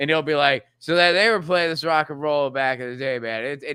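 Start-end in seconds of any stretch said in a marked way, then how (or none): 0.8-3.4 put-on play-acted, drunk-sounding, half-mumbled rambling babble. Imitating a radio host who sounds intoxicated on air: imitating someone sounding intoxicated. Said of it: "he does sound, like, intoxicated the whole time".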